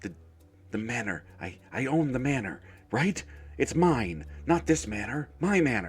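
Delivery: deranged, frantic, unhinged, swooping and rising. A character the others say is going mad: going mad. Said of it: "he he is going mad".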